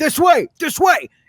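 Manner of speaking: very high shout, echoing and far off. A narrator voices a small figure gesturing from a crack, shouting, echoing through tunnels. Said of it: "shouting, echoing through the tunnels".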